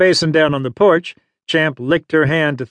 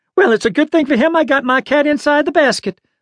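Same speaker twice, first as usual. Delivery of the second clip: indignant, affronted, very high voice; 10 semitones higher than usual. An old lady answers a man apologizing for his dog chasing her cat: indignant. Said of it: "the old lady said indignantly".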